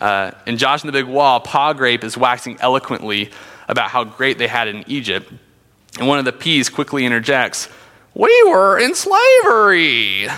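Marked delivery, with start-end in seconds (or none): 8.1-10.3 very high, drawn-out sing-song, "slavery" stretched, loud, high. Quoting a VeggieTales pea who interrupts about Egypt: VeggieTales pea impression. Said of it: "You didn't know I had the impressions".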